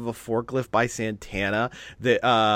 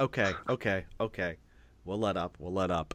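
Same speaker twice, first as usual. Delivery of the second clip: low, quiet, mock yielding tone. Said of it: "Ortiz says".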